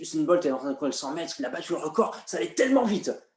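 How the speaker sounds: fast, rattled off, gathering speed. Showing acceleration with an Usain Bolt hundred-metre example: speeding up, fast. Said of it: "en accélérant ... ça donne ceci".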